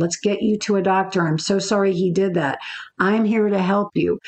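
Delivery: plain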